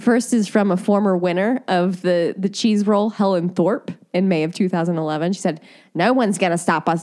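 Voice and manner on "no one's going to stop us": put-on Australian-sounding accent. Reading out a former cheese-rolling winner's quote, in an accent that came out australian. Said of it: "that's more Australian".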